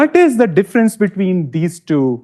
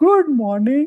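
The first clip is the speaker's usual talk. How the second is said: quieter, softer, toned-down, slightly higher-pitched delivery; 8 semitones higher, 3 dB quieter than usual. Speaker showing an audience the difference in loudness: not so loud. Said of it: "The other one was not so loud".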